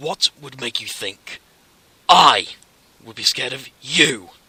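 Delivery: furious, very loud, angry voice. Reading a story aloud, a character challenges another: angry voice. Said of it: "he asked with an angry voice".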